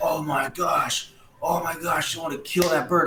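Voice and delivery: put-on exasperated outburst. Retelling the moment a bird pooped on a golf partner, retelling being so mad. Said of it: "Like I was like so mad".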